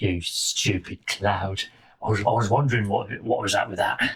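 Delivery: put-on full-on, low, tough-guy hard-man Cockney accent. A tiny mouse appears from a hole and speaks to you, Jason Statham hard-man Cockney. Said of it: "full on like Jason Statham levels of hard man, hard man Cockney".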